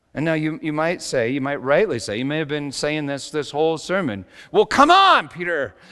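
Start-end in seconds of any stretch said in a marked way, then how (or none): 4.5-5.6 put-on loud yelling at full voice. Mid-sermon, calling out to a listener, yelling. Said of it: "Sorry for yelling".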